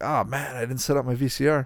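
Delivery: ordinary delivery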